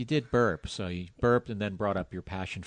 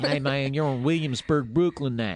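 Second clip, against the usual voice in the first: loud, put-on Southern American accent; 6 semitones higher, 7 dB louder than usual. Retelling what a passing cyclist yelled at them, imitating a southern accent. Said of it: "He had a southern accent?".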